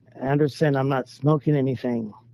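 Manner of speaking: ordinary delivery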